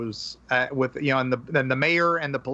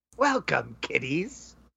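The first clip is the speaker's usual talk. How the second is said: voice like a horror host; 3 dB quieter than usual. Doing an impression after the other speaker mentions the Crypt Keeper: Crypt Keeper voice. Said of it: "I used to do a pretty good one too".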